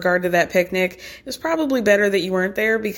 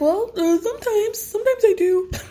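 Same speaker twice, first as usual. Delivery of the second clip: put-on kid voice, much higher pitch; 13 semitones higher than usual. Retelling a young son's answer to a question, put-on little kid voice. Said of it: "I'm trying to do a kid accent".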